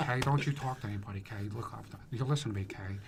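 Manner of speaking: deep gangster-boss voice. Recalling how a guy he was with used to talk, Al Pacino Godfather impression. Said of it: "That's that's from Godfather".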